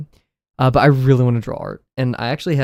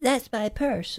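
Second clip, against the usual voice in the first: very high, soft little cartoon kid voice; 11 semitones higher, 10 dB quieter than usual. Quoting a favourite show's bit, attempting a kid character's voice. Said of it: "I can't do his voice".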